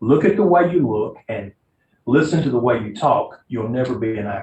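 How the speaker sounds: ordinary delivery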